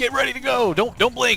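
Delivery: very high, hyped announcer voice. Praising a game's announcer, the speaker imitates the game's announcer. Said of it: "the announcer voice in this game is super good".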